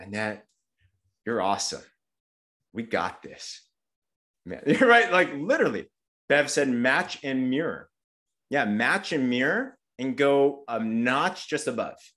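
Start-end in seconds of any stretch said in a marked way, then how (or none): 0.0-3.6 soft, slow, gentle, unhurried tone. Showing her own tone when encouraging Annette: gentle, soft-spoken. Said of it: "I'm very gentle. I talk slower. Like this is literally my tone".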